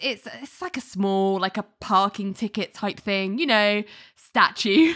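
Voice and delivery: ordinary talk, nothing marked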